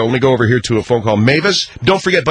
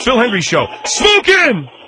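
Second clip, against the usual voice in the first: angry, much higher; 11 semitones higher than usual. Coaching another person how to say the show line; angry. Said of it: "Now do it angry".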